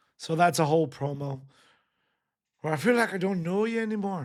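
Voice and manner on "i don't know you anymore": poor put-on Scottish accent, higher. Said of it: "I got a bad Scottish accent".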